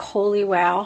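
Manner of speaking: normal talking voice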